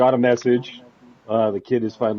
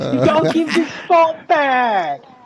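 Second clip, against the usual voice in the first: put-on high, slow, horrible English accent. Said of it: "Sorry for my horrible English, accent".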